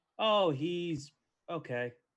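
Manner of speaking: ironic, sarcastic, deliberately faint-sounding praise. Answering a "New Choice" call with a fresh line: sarcastic. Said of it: "I say sarcastically because he's great".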